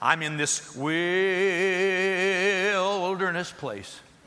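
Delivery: trembling voice, very slow, "wilderness" stretched out. Speaker imitating people who talk about being in the wilderness, mock quivering, drawn-out voice. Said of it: "wilderness has got like 9 syllables and there's a quiver in their voice".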